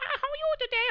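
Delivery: very high, squeaky, dubbed woman voice. Speaker complaining about dubbed voices for a big tough guy, high squeaky woman voice. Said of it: "has a woman voice that goes".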